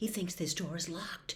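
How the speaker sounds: very quiet, hurried, fast whisper. Reading a story aloud, voicing Harry's line to Neville, whispering. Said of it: "Harry whispered".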